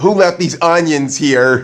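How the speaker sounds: ordinary talk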